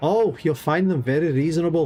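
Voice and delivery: put-on Irish accent. Reading an interactive story aloud, voicing May offering a room, in May's Irish accent. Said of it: "if I can keep this accent up".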